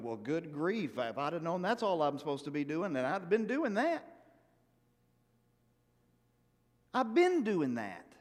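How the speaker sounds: thick, dripping sarcasm with swooping pitch. Playing Job replying to Eliphaz's advice to seek God: dripping sarcasm as Job. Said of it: "I'm gonna be dripping in sarcasm".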